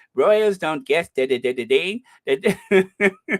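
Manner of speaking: loud, put-on posh English accent.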